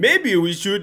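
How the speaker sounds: put-on Danish accent. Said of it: "I'll do the accent".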